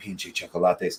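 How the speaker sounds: muttering under breath. Retelling what a manager said after a customer ordered: imitating someone muttering under breath. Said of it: "under her breath".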